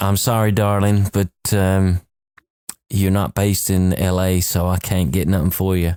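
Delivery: ordinary talk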